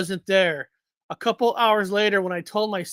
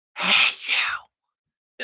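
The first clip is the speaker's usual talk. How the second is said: loud, clear, carrying stage whisper. Retelling a voice heard calling out at the hospital, imitating a loud whisper. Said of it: "It was like a loud whisper".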